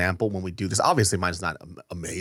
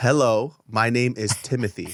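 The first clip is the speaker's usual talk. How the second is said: ordinary delivery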